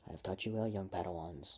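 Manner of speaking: ordinary delivery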